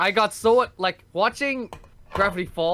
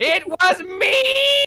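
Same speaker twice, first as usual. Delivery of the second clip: very high, shrill, loud cartoon voice pushed out; 12 semitones higher, 6 dB louder than usual. Quoting favorite lines said by Hop Pop: Hop Pop voice. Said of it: "anything that Hop Hop says".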